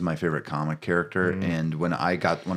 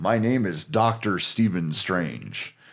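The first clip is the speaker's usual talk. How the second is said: put-on American accent. Imitating the actor of Doctor Strange: Benedict Cumberbatch's American accent. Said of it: "I've literally done that for my wife".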